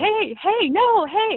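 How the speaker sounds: mock yell, very high-pitched and very drawn-out. Retelling yelling at a charging deer, retelling own yelling. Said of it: "I started yelling".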